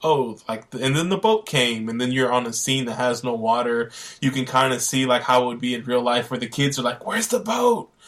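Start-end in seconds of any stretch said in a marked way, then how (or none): 7.0-7.9 put-on higher, childlike whisper under the breath. Retelling how kids on stage asked about a missing prop: imitating kids whispering under breath. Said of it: "they're kinda whispering it under their breath".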